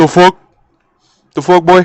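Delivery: put-on suspicious tone. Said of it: "with this look on their face".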